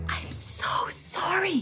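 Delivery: whispering. A narrator reads a girl's words after security guards demand the goods: whispered. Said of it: "she whispered".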